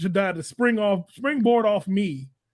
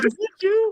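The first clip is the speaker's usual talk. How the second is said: incredulous, startled, much higher pitch.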